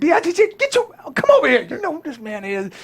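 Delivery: very high, loud, swooping hollering. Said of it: "This is [name] screaming at me".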